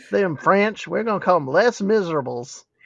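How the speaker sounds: fake put-on rural Southern accent. Talking about a favorite musical and how to say its title, Southern redneck accent. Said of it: "I like to say it Southern redneck".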